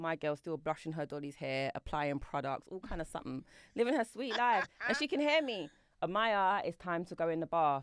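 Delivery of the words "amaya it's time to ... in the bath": ordinary delivery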